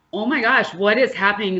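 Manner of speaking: put-on panicky voice. Retelling a sudden anxiety attack before bed, imitating own panicky words. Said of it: "it was a very panicky".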